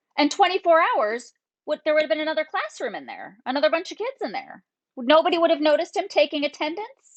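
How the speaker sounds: high, angry, scolding, fed-up voice. Venting about a classroom attendance mix-up, the speaker slips into her angry mom voice. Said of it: "Did you hear just my mom voice come out?".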